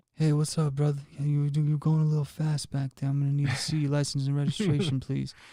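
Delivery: put-on Louisiana drawl. Doing an impression of Steven Seagal pulling someone over: Steven Seagal impression. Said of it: "to the impression".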